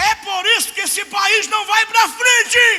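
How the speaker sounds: very high, shrill, loud shout. Retelling how a woman stepped back and shouted: imitating a woman shouting. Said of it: "deu outro passo pra trás e gritou".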